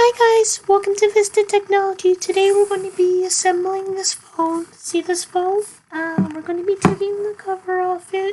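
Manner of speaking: put-on squeaky, very high thirteen-year-old voice. Imitating own younger self's video intro in a very high voice. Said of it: "I probably still can't do that high of a voice".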